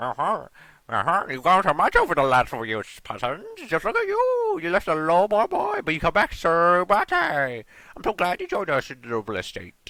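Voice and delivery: lively, bouncing put-on voice, high, loud, swooping. Trying to remember a character's voice and welcoming someone back, in a Kermit voice. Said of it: "How did I do the Kermit voice?".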